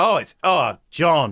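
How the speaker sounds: bursting with real passion, heartfelt exclamation. Speaking to John about a TV series, passionate. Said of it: "did you hear the passion in my voice there?".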